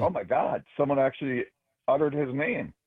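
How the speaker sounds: ordinary delivery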